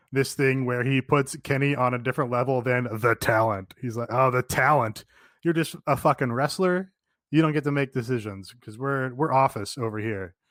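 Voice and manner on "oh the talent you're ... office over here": usual speaking voice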